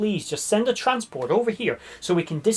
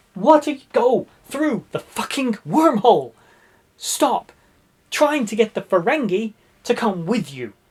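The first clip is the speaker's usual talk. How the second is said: exasperated screaming; 4 semitones higher, 4 dB louder than usual. Showing how they react to the episode on television: acting out screaming at the TV. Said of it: "I'm screaming like this at the television".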